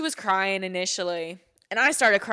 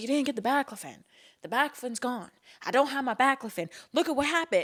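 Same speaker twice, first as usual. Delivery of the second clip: mock flipping out, fast and frantic, blurting; 3 semitones higher than usual. Retelling how Michelle flipped out over missing baclofen: imitating Michelle flipping out. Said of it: "she starts, like, flipping out".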